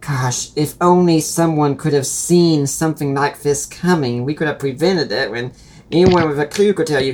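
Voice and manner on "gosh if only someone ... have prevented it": ordinary talk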